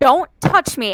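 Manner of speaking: acted, very stern, firm, no-nonsense tone. Retelling warding off an unwanted hug: retelling a stern command. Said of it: "And I said it very sternly".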